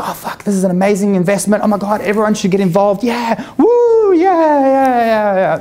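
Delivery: mock giddy excitement, high, swooping, yeah drawn out. Retelling getting hyped about an investment: imitating own past excitement. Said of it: "But when I was excited, I was like".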